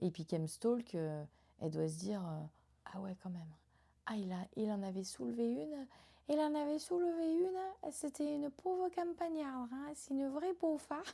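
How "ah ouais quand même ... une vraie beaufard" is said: put-on southern French accent, higher. Imitating what she might think while stalking online: put-on southern French accent. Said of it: "quand je fais cet accent".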